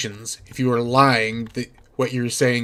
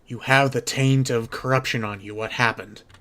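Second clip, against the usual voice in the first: soft, secretive half-whispered voice. Voicing Miss Lysander as she comes up to Geordie Jordan, half-whispering. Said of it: "she whispers to him".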